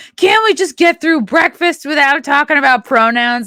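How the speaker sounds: mock weary dad voice, high, angry yelling. Picturing a weary dad at breakfast, acting out his line: imitating an angry dad yelling. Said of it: "And he's yelling".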